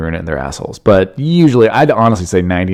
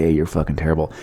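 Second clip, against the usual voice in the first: put-on whisper, lower, quieter, faster; 5 semitones lower, 17 dB quieter than usual. Recalling bombing on stage, the speaker acts out what a man might have whispered: mock whisper. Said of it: "He just under his breath was like".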